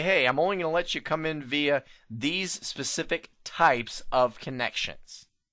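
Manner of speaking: ordinary delivery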